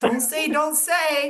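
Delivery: slow, drawn-out, stretched delivery. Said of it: "Monica's telling y'all".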